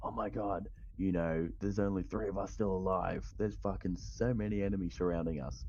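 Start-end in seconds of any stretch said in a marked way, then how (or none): none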